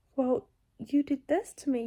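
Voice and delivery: normal talking voice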